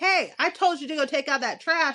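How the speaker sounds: high-pitched yelling at full volume. A mother retelling telling her son to take out the trash, imitating her yelling. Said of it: "And I'm now yelling".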